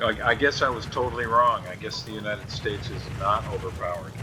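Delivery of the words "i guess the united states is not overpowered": ordinary talk, nothing marked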